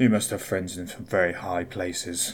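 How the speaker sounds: low, flat, tired, weary mumble. Voicing a detective in an interrogation room who mumbles wearily: weary mumble. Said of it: "kind of wearily, and mumbles".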